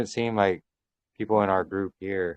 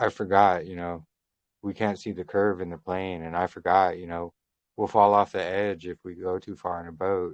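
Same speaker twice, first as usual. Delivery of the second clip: ordinary talk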